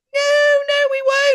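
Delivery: high voice giggling and laughing through words. Speaker relays a spirit's reply to an audience, imitating someone laughing. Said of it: "he's just laughing his head off".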